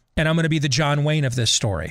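normal talking voice

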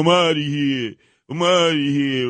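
acted woe-is-me lament. Mocking a councilman who is always moaning: imitating Joe Borelli moaning. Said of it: "always moaning, going".

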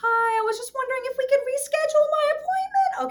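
very high, loud, overly nice sugary politeness.

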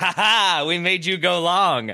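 high, drawn-out mocking cheer dripping with sarcasm. Describing the Arsenal stadium crowd's cheer, retelling very sarcastic cheering. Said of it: "in a very sarcastic like".

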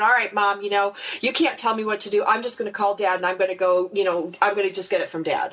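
ordinary delivery

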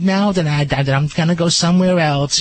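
put-on slow, unhurried elderly woman voice. Retelling a dog owner refusing advice: old lady impression. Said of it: "I love your old lady impression".

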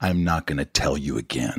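stern, dreaded fatherly dad voice. Retelling a father's warning in the dreaded voice: imitating dad's stern warning voice. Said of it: "he's got that voice".

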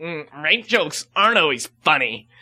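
put-on low, irritated, angry, annoyed voice. Retelling what a girl in the audience told a comedian, retelling a quote angrily. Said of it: "you sound mad at her".

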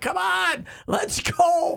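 shrill, very high, loud, stretched-out screaming. Retelling a fan during a long review, imitating someone screaming. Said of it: "he's just screaming at him, like".

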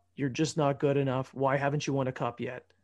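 ordinary talk

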